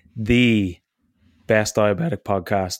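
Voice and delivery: voice cracking. Introducing the podcast episode, voice cracking. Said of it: "There's the voice crack".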